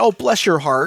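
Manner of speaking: put-on passive-aggressive tone. Retelling own reply to someone asking about the roads: imitating own passive-aggressive reply. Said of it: "Adam has really become the passive-aggressive face".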